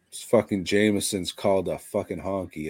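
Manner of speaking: ordinary talk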